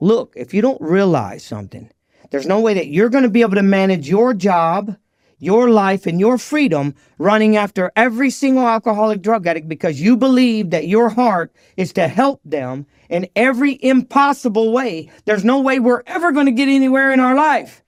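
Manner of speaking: sharp, snapped-out, scolding lecturing tone. Recounting his reply when she asked him to take others along, retelling snapping at someone. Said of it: "I snapped at her and I was like".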